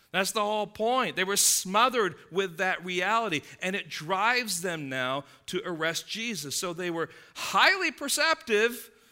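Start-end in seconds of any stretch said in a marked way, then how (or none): 6.5-8.8 mocking, sarcastic, with high rising lift. Commenting on the leaders who perceived the parable was about them: sarcastic. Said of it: "little sarcasm there".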